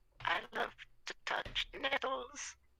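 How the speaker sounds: very high, rough, creaky voice. Quoting a line from back in the day: Salad Fingers voice. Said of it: "You sound like Salad Fingers just now".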